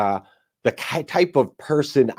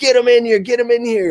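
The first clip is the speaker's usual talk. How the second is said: mock screaming, higher; 12 semitones higher than usual. Retelling how an inmate banged on the window: imitating an inmate screaming. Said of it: "he's screaming, like".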